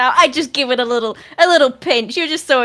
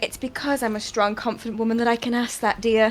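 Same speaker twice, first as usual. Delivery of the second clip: quiet, low-voiced reply; 2 semitones lower, 8 dB quieter than usual. Player in a roleplaying game looking at another character and answering her: low voice. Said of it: "in a low voice say".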